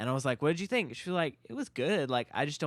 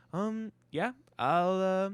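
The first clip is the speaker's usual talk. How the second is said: high-pitched, halting put-on voice with odd cadence; 6 semitones higher than usual. Imitating how Trevor talks, sounding like Korg: imitating Korg's voice. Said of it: "a Korg voice".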